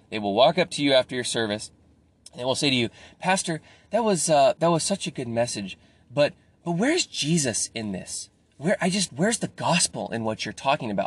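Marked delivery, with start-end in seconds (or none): 3.1-11.0 play-acted condescending, passive-aggressive talking-down tone. Speaking to pastors, the speaker imitates someone questioning a sermon afterward: mock-condescending tone. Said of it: "the most condescending tone and passive-aggressive".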